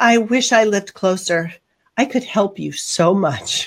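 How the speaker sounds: put-on very sweet, honeyed, syrupy voice. Recalling a stepmother's visit to the kitchen, imitating her very sweet voice. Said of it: "with a very sweet voice".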